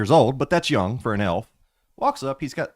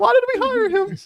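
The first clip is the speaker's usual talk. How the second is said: very high little cartoon mouse voice; 4 dB louder than usual. Mocking a teammate's changing voice, repeating his line: Mickey Mouse voice. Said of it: "Mickey Mouse?".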